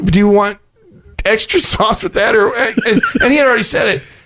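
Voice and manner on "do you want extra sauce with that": words broken up by laughter while talking. Retelling an order at the Taco Bell drive-thru, imitating the lady laughing mid-sentence. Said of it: "she's laughing".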